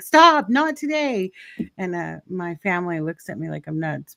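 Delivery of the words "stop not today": screaming, high pitched. Retelling constant car warranty calls, retelling screaming around the house. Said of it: "I'm always screaming around the house like".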